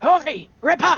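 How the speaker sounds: rough, loud, gruff yell, pitched very high. A voice yells to a mastiff named Ripper, a loud gruff yell. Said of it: "a loud gruff voice yell".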